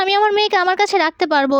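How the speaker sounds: plain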